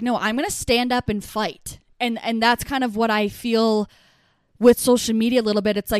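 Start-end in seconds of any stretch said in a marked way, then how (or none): none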